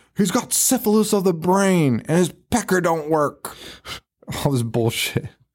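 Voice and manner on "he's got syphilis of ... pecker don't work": mock screaming tirade, shrill and enraged. Retelling a man storming into the house at Terry, retelling a scream. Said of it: "He's screaming".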